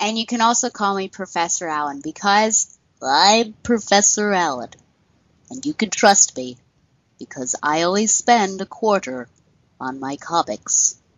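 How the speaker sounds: insulting, condescending, talking-down host voice. As a first-time guest on the show, mock the host with a condescending Professor Allen impression. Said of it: "that impression was insulting, condescending".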